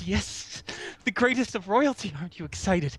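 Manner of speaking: frantic, excited high voice. Skipping frantically over to Mila in the game, excited Cosmic King voice. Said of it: "goes over excitedly to Mila, skipping in a frantic way".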